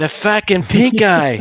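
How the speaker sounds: put-on Rhode Island accent. Repeating a drunk stranger's line when asked: imitating a Rhode Island accent. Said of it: "you gotta say it with the, uh, the Rhode Island accent".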